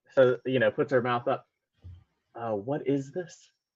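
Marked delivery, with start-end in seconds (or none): 2.4-3.5 slow, hushed half-whisper in character voice. Asking another character in Common what this is, half-whispering.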